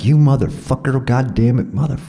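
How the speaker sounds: furious, high-pitched yelling. Retelling getting out of a crashed truck: imitating own angry yell. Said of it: "I got out yelling at him".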